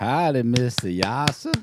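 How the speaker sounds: put-on western cowboy drawl. A host greets a co-host during the show introductions, in a Red Dead Redemption cowboy voice. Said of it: "that's your RDR voice, right?".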